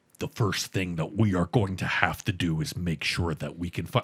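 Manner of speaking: very low, slow, deliberate, precise, over-enunciated. Imitating a man who speaks slowly and enunciates everything, slow, over-enunciated imitation. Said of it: "he perfectly enunciates every single thing".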